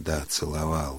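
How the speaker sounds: ordinary delivery, nothing marked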